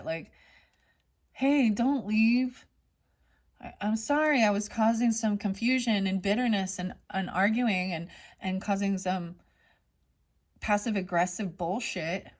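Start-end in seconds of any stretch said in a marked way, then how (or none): none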